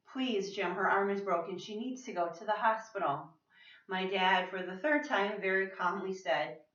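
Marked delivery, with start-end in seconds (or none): none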